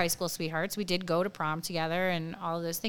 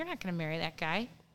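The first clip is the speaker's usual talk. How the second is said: put-on cocky, smug, self-assured, know-better tone; 6 dB quieter than usual. Retelling what Brian said on running into the speaker in town: imitating Brian, smug. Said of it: "like a smug jerk in his twenties".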